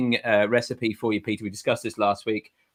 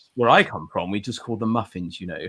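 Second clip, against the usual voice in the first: put-on English film-star accent, laid on thick; 2 semitones lower than usual. Retelling a reply to an old woman at a hotel: Hugh Grant voice. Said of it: "put my Hugh, Hugh Grant voice on immediately".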